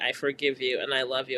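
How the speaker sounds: plain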